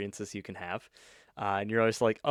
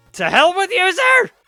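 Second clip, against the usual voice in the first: booming, loud yell, pitched way up; 13 dB louder than usual. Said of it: "Sorry for shouting".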